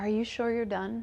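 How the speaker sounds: sweet, tender, very loving tone. Retelling what her intuition asked her: imitating a very loving voice. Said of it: "very lovingly".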